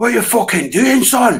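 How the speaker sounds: put-on high-pitched Glaswegian Glasgow accent. Retelling what a big guy shouted backstage at a gig: imitating a Glasgow accent. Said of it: "with a Glasgow accent".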